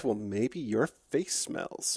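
very low, hushed sotto voce mutter under breath. Character told she must wait, muttering under her breath. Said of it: "I mutter under my breath".

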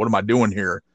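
acted put-on confusion. Recapping a show segment, acting out her lines, imitating someone confused. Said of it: "she's like all confused".

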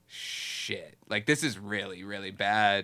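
ordinary delivery

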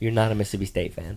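ordinary talk, nothing marked

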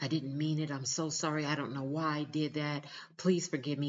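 play-acted crying, tearful, pleading tone. Imitating an abuser begging forgiveness: imitating a crying apology. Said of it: "And they're crying and holding on to you".

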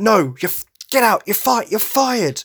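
shouting. Retelling a scene where Dwight fires the people quitting, imitating Dwight yelling. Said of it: "Dwight starts yelling at them like".

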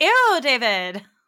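shrill, high-pitched, very loud belting. Correcting the other speaker's bad impression with the right way.

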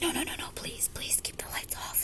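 put-on woman's whisper. Recounting her birth plan, the speaker imitates a woman whispering. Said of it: "using a whispering voice".

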